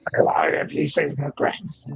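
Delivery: put-on old man voice. Recalling a voice once used to prank people: old man voice. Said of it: "the old man voice I used to do".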